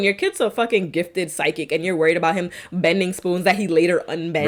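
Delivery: ordinary delivery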